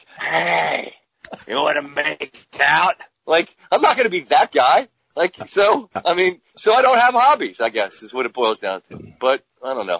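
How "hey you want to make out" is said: put-on hot-breathed, rough, boozy drunk voice. Joking about a dad coming home late from golf: put-on boozy drunk voice. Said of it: "with a real boozy hot voice".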